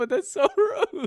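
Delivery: laughing while talking. Reacting to a rude chat message, laughing while talking. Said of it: "I'm sorry I'm laughing".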